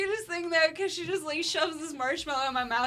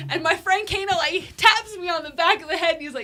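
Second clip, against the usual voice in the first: ordinary talk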